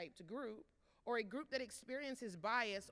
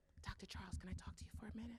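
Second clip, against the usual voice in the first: soft, hushed, breathy whisper; 2 semitones lower, 8 dB quieter than usual. Retelling a client quietly approaching after a talk, imitating someone whispering. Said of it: "Why are we whispering?".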